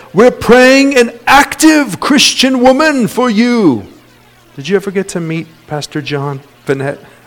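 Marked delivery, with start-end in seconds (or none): 0.1-3.8 put-on New Zealand accent, pitched higher than normal. Retell what Pastor Dave's brother used to tell you before you met your wife, in a put-on New Zealand accent. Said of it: "used to tell me in his New Zealand accent".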